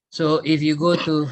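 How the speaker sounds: ordinary talk, nothing marked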